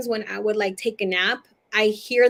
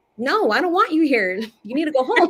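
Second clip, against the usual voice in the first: put-on scolding tone in a child's voice; 4 semitones higher, 4 dB louder than usual. Retelling scolding a dead uncle who appeared on the bed: imitating own childhood scolding. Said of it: "a seven-year-old scolding an uncle".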